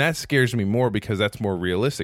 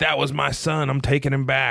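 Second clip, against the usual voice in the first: bad, terrible put-on New York accent; 4 semitones higher than usual. The speaker voices someone taking back their son: terrible New York accent. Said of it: "that sounded like your New York like accent".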